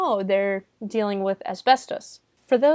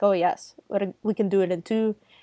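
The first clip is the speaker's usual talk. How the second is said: put-on Irish accent. Discussing a movie, the speaker quotes Gordon's line in Gordon's Irish voice. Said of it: "so his Irish voice is like".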